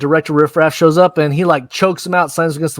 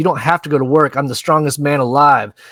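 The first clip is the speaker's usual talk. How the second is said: plain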